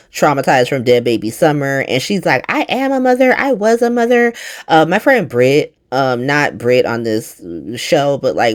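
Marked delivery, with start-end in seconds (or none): 2.4-4.3 sharp, angry retort tone. Retelling a character's reply to the word almost: imitating someone snapping angrily. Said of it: "Christina fucking snaps".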